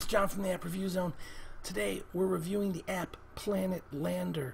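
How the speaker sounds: stage half-whisper. App reviewer opening a review after midnight while everybody sleeps, half-whispering. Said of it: "I'm sorry I'm whispering".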